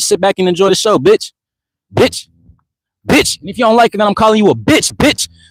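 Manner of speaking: shouting. Answering a viewer who asks why he's yelling: yelling. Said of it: "I'm yelling because it's my platform".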